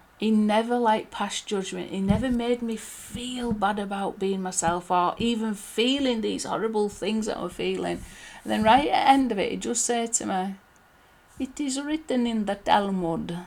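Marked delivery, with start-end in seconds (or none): 11.4-13.4 put-on thick Israeli accent. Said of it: "he had a really quite thick accent".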